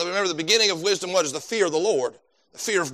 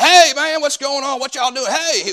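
loud, high-pitched hollering; 8 semitones higher, 6 dB louder than usual. Show how he greeted everybody from the middle of the school hallway, imitating Vic hollering. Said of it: "just hollering at everybody".

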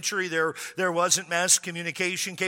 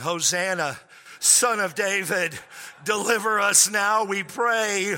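put-on long, slow, stretched-out yelling. Retelling his reaction to a tax bill: imitating his own yelling. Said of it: "I started yelling".

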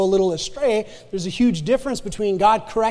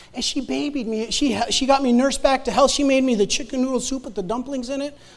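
ordinary talk

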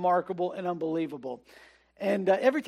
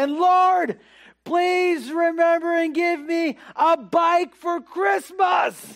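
put-on child yelling at top of lungs, very high, drawn-out; 10 semitones higher, 8 dB louder than usual. Retelling a child's bedtime prayer, imitating a child yelling. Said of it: "suddenly he yelled, like, at the top of his lung".

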